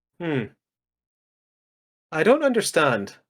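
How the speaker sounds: unbothered, straight-faced, very calm and sing-song. Retelling how a bad guy answered a plan to isolate the virus; imitating a very calm response. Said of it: "very calmly responds".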